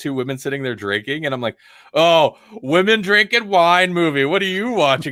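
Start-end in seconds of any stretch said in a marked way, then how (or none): 1.9-5.1 put-on high, loud, dismissive teasing scoff. Retelling how he made fun of her movie choice: retelling mocking someone. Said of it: "I was just making fun of her".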